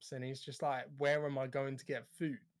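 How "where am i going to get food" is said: mock snapped-out, biting tone. Retelling a film scene where Seita answers the doctor: Seita snapping. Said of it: "Seita snaps".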